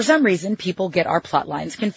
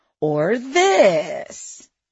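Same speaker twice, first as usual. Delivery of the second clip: condescending, patronizing, talking-down tone. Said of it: "His tone was so condescending".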